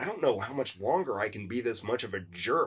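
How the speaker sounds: quiet, hushed, soft half-whisper. Retelling what was said to a sister during filming: imitating own half-whisper. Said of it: "I whispered to her".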